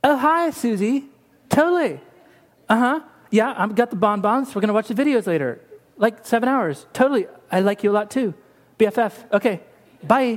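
put-on gabbing, chatty valley girl voice. Retelling how a woman answered her phone mid-conversation, valley girl voice. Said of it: "That's my best valley girl".

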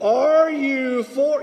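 slow, loud, word by word. Acting out repeating a question to God, saying it slowly and loudly. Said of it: "I will say it again slowly and loudly".

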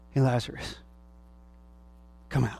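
mock tearful voice, choked with held-back tears, calling. Retelling Jesus calling Lazarus out of the grave: imitating someone choking back tears. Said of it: "choking back the tears".

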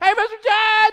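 shrill, very high, loud, full-throated holler. Retelling a persistent woman calling out to the judge: imitating a woman yelling. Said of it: "she's yelling".

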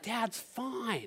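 reassuring voice. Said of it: "I said".

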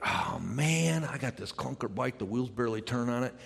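ordinary talk

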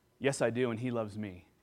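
soft-voiced, gentle, quiet delivery. Retelling a stranger's reply to a question: imitating someone speaking softly. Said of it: "got soft in her voice".

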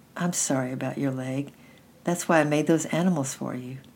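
ordinary delivery

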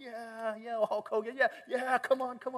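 high, pumped-up, hyping voice. Retelling a trainer playing up the crowd: imitating someone hyping a crowd. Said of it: "he's playing up the crowd".

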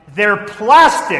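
very loud, high-pitched, stunned, horrified shout. Telling a church story, the speaker acts out a woman at the lilies, retelling a shocked shout. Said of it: "in a shocked voice shouted".

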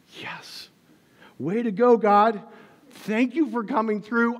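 very loud, high, ecstatic cheer. Retelling opening an envelope and finding a check: retelling ecstatic joy. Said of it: "I was ecstatic".

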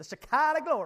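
loud Southern gospel preacher delivery.

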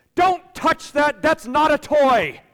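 put-on, very high, very loud, shrill snapping yell. Retelling snapping at a child reaching for a toy: imitating own past snapping yell. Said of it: "And I snap at him".

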